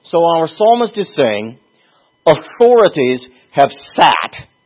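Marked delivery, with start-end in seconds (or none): 2.2-4.4 sat landed with heavy emphasis. Quoting a psalm line to show which word matters: stress on sat. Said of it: "You see how I'm stressing that?".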